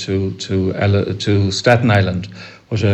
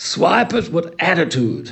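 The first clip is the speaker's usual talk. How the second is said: very high, slow, scornful, disdainful drawl; 9 semitones higher than usual. Retelling what he said while looking at you with complete disdain: mock disdain. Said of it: "he looked at me with complete disdain and he said to me".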